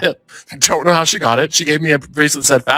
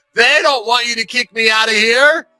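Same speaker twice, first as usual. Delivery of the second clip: mock screaming, much higher pitch; 8 semitones higher than usual. Retelling a woman being removed from the show pointing at the audience, imitating someone screaming. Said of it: "she starts screaming".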